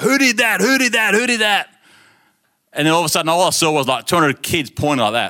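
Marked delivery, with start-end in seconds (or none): 0.0-1.7 high, repeated, mock teacher-style yelling. Act out a science teacher who ran in after something was thrown, imitating a yelling teacher. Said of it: "and he's just yelling".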